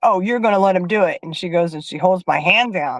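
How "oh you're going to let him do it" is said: angry, cross, irritated, fed-up tone. Retelling how Teresa got mad and held the speaker's hand down, imitating angry Teresa. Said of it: "she got mad and she's like".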